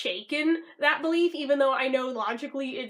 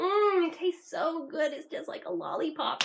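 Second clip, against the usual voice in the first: fake, gushing delight, pretended relish; 4 semitones higher than usual. Retelling a girl licking the bubble wand: imitating someone faking enjoyment.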